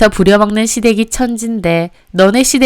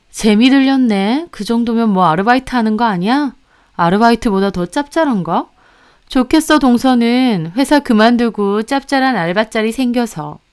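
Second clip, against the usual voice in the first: mocking, needling, sarcastic, sneering tone; 3 dB quieter than usual. Retelling the sister-in-law's continued remarks: imitating sarcastic taunting. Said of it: "저는 비꼬는 형님이 어이가 없더라고요".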